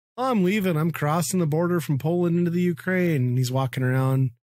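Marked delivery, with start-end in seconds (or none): 0.2-3.2 teasing, jeering, mocking delivery, pitched up high. Retelling a YouTuber's videos before a border crossing: imitating Bald and Bankrupt mockingly. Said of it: "kinda mockingly".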